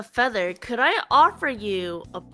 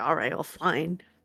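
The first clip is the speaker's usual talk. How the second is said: sad, downcast voice; 8 semitones lower, 6 dB quieter than usual. Voicing a character putting a bottle away quietly: sad. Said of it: "I'm sad now".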